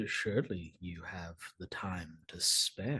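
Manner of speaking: deep, husky, dropped low voice. Narrating a scene, speak the character Adonis's line in a deep, husky voice. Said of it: "says in a, a deep, husky voice".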